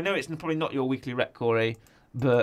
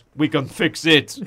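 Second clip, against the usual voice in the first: put-on Austrian accent, louder; 3 semitones higher, 7 dB louder than usual. Retelling a deleted scene where a character speaks: Arnold Schwarzenegger voice. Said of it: "with the voice of Arnold Schwarzenegger".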